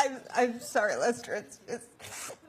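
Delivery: crying, tearful, breaking voice, fighting back tears. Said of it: "why are you crying?".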